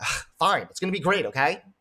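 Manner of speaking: put-on grudging, annoyed tone. Showing how tone changes a line about dinner: imitating a grudging, annoyed tone. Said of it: "the tone in which you say things".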